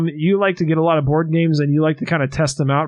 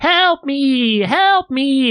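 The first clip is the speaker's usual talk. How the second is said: much higher, retro robotic screaming voice; 10 semitones higher than usual. Speaker describes a chaotic board game, doing its 1990s robotic screaming voice. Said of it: "a 1990s robotic voice screaming".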